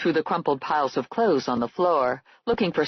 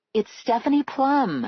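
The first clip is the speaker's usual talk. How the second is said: most reassuring, calm soothing voice, higher pitch; 7 semitones higher than usual. Reading a scene aloud, the narrator calls someone: most reassuring, soothing voice. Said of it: "in my most reassuring, soothing voice".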